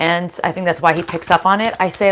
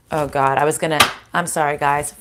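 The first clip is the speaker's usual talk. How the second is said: normal talking voice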